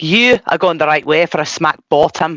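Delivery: mock Scottish monster voice. Trying out impressions, the speaker goes to a Shrek impression. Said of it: "you go to Shrek".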